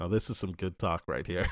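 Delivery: ordinary delivery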